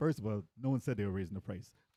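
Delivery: ordinary delivery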